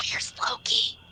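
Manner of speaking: hushed whisper. Asking a question in character as he drops to the ground: whispering. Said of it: "I'm gonna whisper to Sato".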